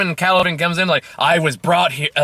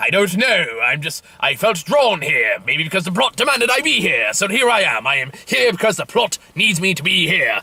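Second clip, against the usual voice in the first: fake, put-on British accent. Retelling a story character's reply, in a put-on british voice. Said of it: "British voice is fun to do".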